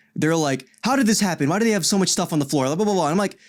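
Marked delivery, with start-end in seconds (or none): 0.9-2.7 high, angry, irritated griping. Retelling how a janitor got mad after a discharge: imitating someone angry. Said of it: "the janitor got mad at me".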